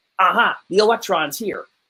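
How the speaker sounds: ordinary delivery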